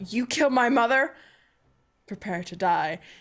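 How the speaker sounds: furious, angry tone. Voicing a character about to attack in a game scene: angry.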